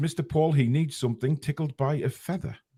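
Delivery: plain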